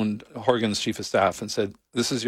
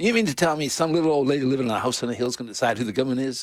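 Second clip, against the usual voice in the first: put-on Tennessee Southern accent, drawling; 3 semitones higher than usual. Retelling what a tourist from Tennessee asked: imitating a Southern accent. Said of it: "with a real Southern accent".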